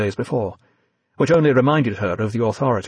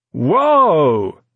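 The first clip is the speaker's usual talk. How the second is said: loud, drawn-out, stagey, theatrical cry of whoa; 6 semitones higher, 5 dB louder than usual. A big man in a tweed coat exclaims after running into Evie, theatrical catchphrase voice. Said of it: "he exclaimed in one of those theatrical catchphrase voices".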